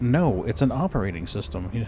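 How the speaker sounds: mock-condescending voice. Retelling how a man answered the speaker's question: mock-condescending voice. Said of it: "in the most con- condescending voice possible".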